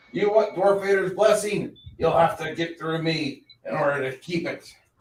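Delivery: hostile, angry, taunting, mocking dwarf voice. A game master voices an unseen figure behind a door calling at the players, angry, mocking voice. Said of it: "you hear a angry voice calling at you, mocking you".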